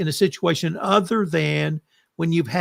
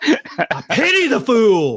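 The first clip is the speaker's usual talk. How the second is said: very slow, loud, swooping, heavily inflected delivery; 5 semitones higher, 5 dB louder than usual. After being told to work on inflection, trying a Mr. T impression again. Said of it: "You really need to work on your inflection".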